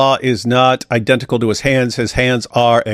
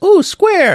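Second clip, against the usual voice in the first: put-on tiny, very high-pitched toddler voice. Imitating the three-year-old kid's reply: imitating a three-year-old kid. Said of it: "the kid would be like".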